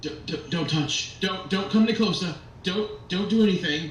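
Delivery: stuttering toy soldier voice. A narrator voices a toy soldier turning to someone approaching: stammering toy soldier voice. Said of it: "another one of the toy soldiers. / And you see this wooden face kind of like like become quizzical for a moment. Yeah, are you here to save us? I I'm not sure what to. I, I just I just woke up just a".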